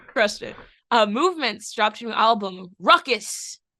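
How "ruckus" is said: said with great energy, high and loud. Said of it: "So that's why I said it with so much energy".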